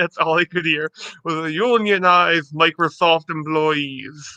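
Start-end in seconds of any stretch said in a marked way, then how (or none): 1.5-4.4 put-on thick, laid-on Russian accent. Quoting a space communist voice from the game Stellaris: thick Russian accent.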